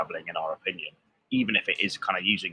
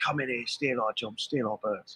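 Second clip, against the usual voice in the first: pitched-up London cabbie voice; 5 semitones higher, 3 dB quieter than usual.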